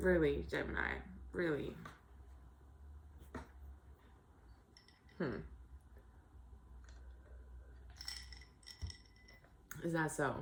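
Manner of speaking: whispered, hushed, breathy, barely held-in laughter. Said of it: "I'm trying not to laugh at you too hard".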